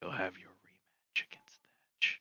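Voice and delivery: not-so-quiet whisper. Leaning down to speak to Leander in character: loud stage whisper. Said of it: "not very quietly whispers".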